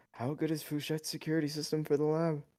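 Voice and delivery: soft, high mutter under the breath. A player speaks as the character Vass, muttering under his breath. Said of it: "say under his breath".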